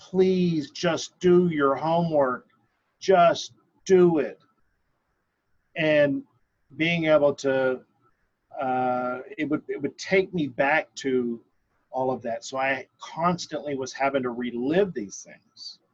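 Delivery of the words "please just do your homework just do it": loud, screaming mother voice. Retelling how a mother screamed about homework: imitating mother screaming. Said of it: "I could see my mother screaming at me".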